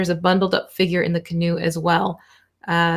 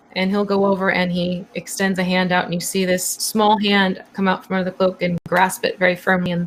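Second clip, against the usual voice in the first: ordinary delivery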